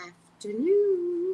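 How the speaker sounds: Caribbean lilt, pitch rising on afternoon. Showing how a greeting is said in the caribbean: pitch going up. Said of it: "you gotta go up".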